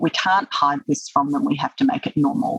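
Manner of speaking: plain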